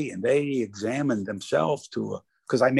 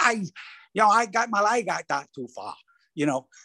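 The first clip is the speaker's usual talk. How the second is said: imitated South African accent, much higher; 8 semitones higher than usual. Retelling what he answered when asked about a shank, in a south african accent. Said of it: "he's got that North, South African accent".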